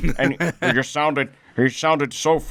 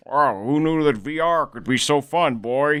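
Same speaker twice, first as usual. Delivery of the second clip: slow, drawn-out voice in early cartoon style. Imagining a new Simpsons episode in VR: old Homer Simpson voice. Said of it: "Why are you so good at the old Homer voice?".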